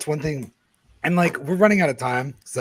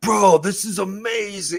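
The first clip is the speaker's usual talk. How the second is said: put-on tipsy, amazed, slow, pitched-up drunken voice; 7 semitones higher than usual. Imagining drunk people at a museum at two AM: imitating a drunk museumgoer. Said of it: "drunk people going to the museum at two A M and just being like".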